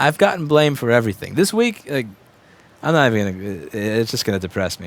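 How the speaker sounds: ordinary delivery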